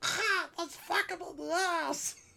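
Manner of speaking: quacking cartoon duck voice. Joking about mascots attacking someone: Donald Duck voice. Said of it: "Donald takes it too far and he's like".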